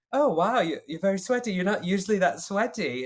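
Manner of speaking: put-on British accent. Retelling what a castmate said backstage: imitating Gina Beck's British accent. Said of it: "she was British".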